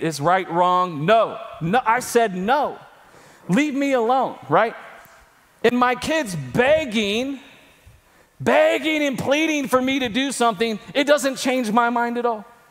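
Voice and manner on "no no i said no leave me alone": acted annoyed, irritated tone. Retelling refusing his begging kids: imitating his own annoyed refusal. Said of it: "It annoys me".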